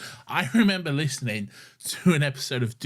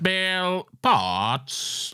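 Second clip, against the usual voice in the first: put-on cyborg voice, higher; 6 semitones higher than usual. Imitating a character from the episode being discussed: classic Cyberman voice. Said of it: "I love the classic Cyberman voice".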